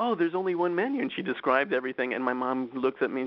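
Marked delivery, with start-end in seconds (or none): 0.0-1.0 really squeaky, high little voice. Retelling what a parisian waitress said to the speaker and their mom, in a squeaky voice. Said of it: "a really squeaky voice goes".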